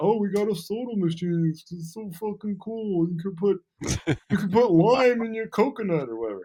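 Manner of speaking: very high, shrill, loud, dopey mocking voice. Mimicking movie theaters bragging, use a dumb mocking voice. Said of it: "make the other side have a dumb".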